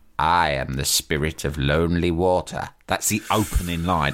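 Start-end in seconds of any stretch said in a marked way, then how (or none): 0.2-2.7 hooded death figure voice, slow and deliberate. Imitating a hooded death figure's opening line in a public information film: Spirit of Lonely Water voice. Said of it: "And he goes like this".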